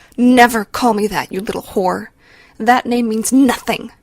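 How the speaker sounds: savage, vicious hiss. Narrator voicing a woman gripping a teen by the throat, savage hiss. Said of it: "she hisses savagely into her face".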